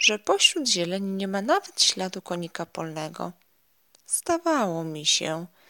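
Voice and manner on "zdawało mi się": with a sigh. The ladybug finds no grasshopper among the clover leaves; sighing. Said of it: "westchnęła".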